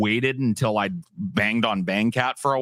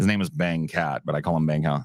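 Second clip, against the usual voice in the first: ordinary talk, nothing marked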